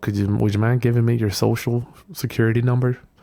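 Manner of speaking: hesitant, timid, unsure, tentative delivery. Showing how not to ask people for their details: hesitant, timid asking. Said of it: "If you say it like that".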